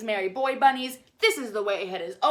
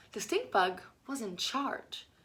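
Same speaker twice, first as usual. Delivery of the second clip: ordinary delivery, nothing marked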